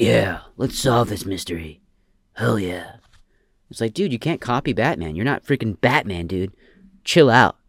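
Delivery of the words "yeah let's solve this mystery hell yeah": low, gruff voice, dropped down. Retelling how a movie detective tried to sound like Batman: Batman voice. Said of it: "he tried to copy the voice of Batman".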